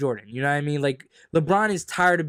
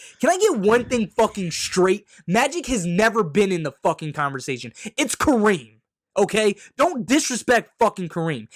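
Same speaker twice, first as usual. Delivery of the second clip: getting loud, raising voice; 5 semitones higher than usual. Arguing about the greatest basketball players, getting loud. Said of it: "Now I'm getting loud".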